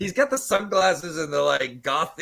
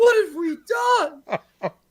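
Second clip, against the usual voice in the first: high, slow crying wail. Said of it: "they're like".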